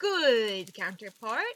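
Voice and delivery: sarcastic. Calling a rival counterpart good while meaning the opposite: sarcastic. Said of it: "I say that in the most sarcastic manner possible".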